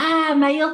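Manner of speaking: acted, high, hysterical screaming shriek. Retelling women in the girls' toilets reacting: imitating women screaming hysterically. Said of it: "the women are screaming hysterically".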